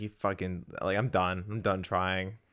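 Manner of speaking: ordinary talk, nothing marked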